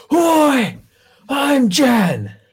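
very high, loud, belligerent, aggressive yell. A player's character stands up and answers who Jan is with an aggressive shout. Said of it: "aggressively shout".

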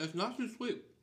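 talking with mouth full. Tasting ice cream with another person, answering mid-bite, talking with mouth full. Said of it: "Don't talk with your mouth full of ice cream".

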